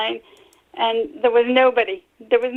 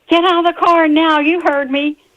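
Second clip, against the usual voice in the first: loud, high-pitched shouting cop voice; 5 semitones higher, 5 dB louder than usual. Retelling what a police officer yelled during a stop: imitating an officer yelling. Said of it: "He yelled at me".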